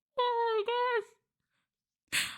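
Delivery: odd startled voice. Chatting about ASMR, suddenly exclaiming just before thanking Creed, in a weird voice. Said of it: "I'm sorry for the weird voice".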